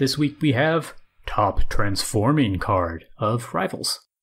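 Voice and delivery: put-on low voice, pushed down deep. Podcast co-host announcing the week's top card segment, in a low put-on voice. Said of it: "you talk like that for the rest".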